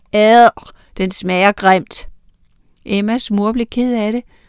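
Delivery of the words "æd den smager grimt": disgusted shouting, louder. Children at the table throw down their forks after tasting the lasagna, shouting in disgust. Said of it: "smed de gaflerne fra sig og råbte".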